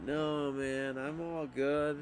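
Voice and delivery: silly, funny voice, very slow and drawn out. Retelling a chat after offering to let Alec go, imitating Alec's funny voice. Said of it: "he said in a really like funny voice".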